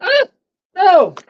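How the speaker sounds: sudden cry pitched very high. Reacting as their stand suddenly breaks mid-conversation: high-pitched cry. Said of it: "What was that high pitched?".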